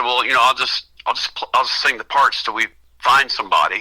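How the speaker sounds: ordinary delivery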